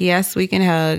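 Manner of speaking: normal talking voice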